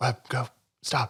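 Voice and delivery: hushed, awkward, low-key voice. Recounting a favorite scene to the other speaker, imitating a hushed awkward voice. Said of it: "Like in a hushed tone".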